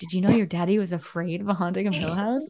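pretend whispering. Acting out teasing the other speaker's son about being scared: mock whisper. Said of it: "I'm gonna whisper to him".

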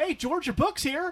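high, loud, bright, cheery shop-clerk voice. Acting out how he sounds once he changes: department store retail voice. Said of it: "he has that department store retail voice".

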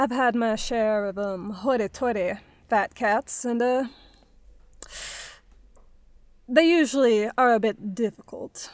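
slow put-on Southern drawl, vowels drawn out. Voicing a librarian character in a tabletop game, put-on Southern accent. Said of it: "keeping my Southern".

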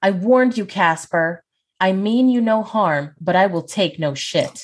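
called out loudly. Narrating a woman at the door warning Casper: yelling. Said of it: "and yell".

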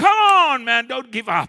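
booming, loud, high rallying crowd shout. Describing witnesses cheering them on in a race, retelling a shout. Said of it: "shouting at me".

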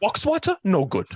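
put-on very high, weird Dutch accent. Imitating a Dutch man being discussed, in a weird Goldmember accent. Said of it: "he's got that weird like gold member fucking accent".

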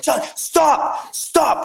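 panicked, freaked-out, frantic outburst. Retelling his buddy panicking without his passport, imitating him freaking out. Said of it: "my buddy just starts freaking out".

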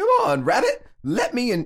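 very high, swooping, swinging cartoon voice. Reading Tigger quotes aloud in turn, in a Tigger voice. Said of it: "Was that a good Tigger voice?".

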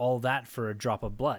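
plain

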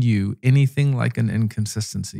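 ordinary delivery

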